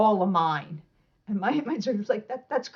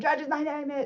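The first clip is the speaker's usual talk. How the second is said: put-on, high-pitched screamed shouting; 6 semitones higher, 3 dB quieter than usual. Retelling screaming one's name to the judges: imitating own scream. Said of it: "I scream my name".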